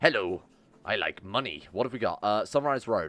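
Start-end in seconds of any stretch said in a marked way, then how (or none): 0.0-1.6 cartoon crab character voice. Between comments on the options, the speaker breaks into a Mr. Krabs impression. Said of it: "That's my Mr. Krabs impression".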